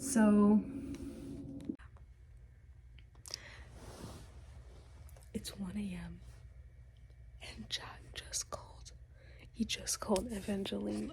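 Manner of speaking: very quiet, hushed whisper. Alone at 1 a.m., reacting to a book while reading it: whispering. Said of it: "I don't know why I'm whispering".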